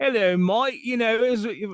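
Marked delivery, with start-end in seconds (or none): 0.0-0.8 bad, pitched-up fake British accent.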